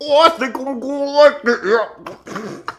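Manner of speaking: very high, slow speech with a full mouth, chewing. Acting out a british soldier chewing a mushroom he just picked: mock chewing while talking. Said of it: "chewing on a fucking mushroom that he just picked".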